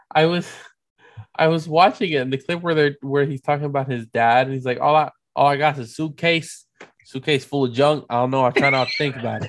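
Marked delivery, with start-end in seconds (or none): 4.8-9.5 put-on gruff New York accent. Imitating an actor's line about his dad: Andrew Garfield's fake New Yorker accent. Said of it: "he's doing a bad fake New Yorker accent".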